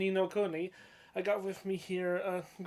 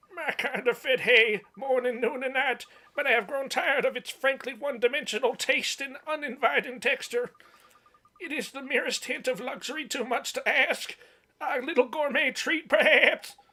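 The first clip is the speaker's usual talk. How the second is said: high, raised animal character voice; 5 semitones higher, 6 dB louder than usual. Asked by a companion what it eats, answering as the alpaca: Mister Alpaca character voice. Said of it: "a good voice for that thing".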